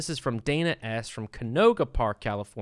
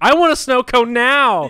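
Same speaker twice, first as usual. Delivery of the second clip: shrill, booming, very loud, drawn-out bratty yell; 12 semitones higher, 15 dB louder than usual. Retelling a woman's outburst, speaker is imitating someone yelling. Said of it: "she's yelling, like".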